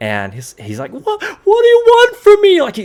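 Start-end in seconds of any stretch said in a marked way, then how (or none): 0.9-2.6 very high, very loud, terrified, frightened shriek. Voicing a man shot at through a door, screaming in fear. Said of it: "he's screaming from inside".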